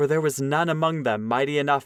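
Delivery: ordinary delivery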